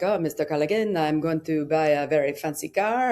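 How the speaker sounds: badly done, terrible put-on French Canadian accent. Quoting George telling Mister Callaghan about a car, George's terrible French Canadian accent. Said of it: "That's my terrible French Canadian accent".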